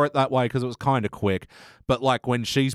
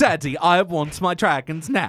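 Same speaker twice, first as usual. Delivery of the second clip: put-on spoiled child voice, higher; 6 semitones higher than usual. Joking with another speaker about a character, going full Veruca Salt voice. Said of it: "going full Veruca Salt".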